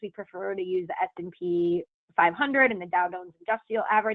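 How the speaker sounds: ordinary delivery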